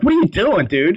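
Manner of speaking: high-pitched shouting. Recounting watching a show, reenacting screaming at the TV. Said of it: "I was screaming at the TV".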